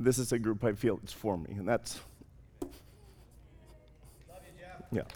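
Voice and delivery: whispered, breathy, teary and choked up. Greeting the group at the start of a talk, tearful and choking up. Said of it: "I know I never cry".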